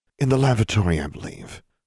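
loud stage whisper. Reading a story aloud, a woman at the table answers: loud whisper. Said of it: "in a whisper so loud there was hardly any point".

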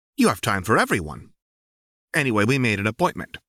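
bright, cheery, swooping, quick coaxing tone. Narrator reads the companion's reply, said cheerfully. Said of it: "your companion says cheerfully".

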